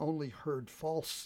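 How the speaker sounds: ordinary delivery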